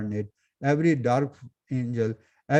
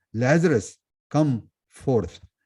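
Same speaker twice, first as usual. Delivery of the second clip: firm, authoritative, commanding call. Retelling the story of Lazarus, quoting Jesus as a very loud command. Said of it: "very very loud voice".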